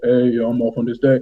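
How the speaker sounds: low, deep, plain speaking voice. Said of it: "And in his low voice".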